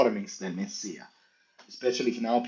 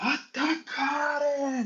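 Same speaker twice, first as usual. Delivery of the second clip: put-on very high, full-force, super loud yelling. Retelling how a man started yelling, imitating a super loud yell. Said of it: "super loud".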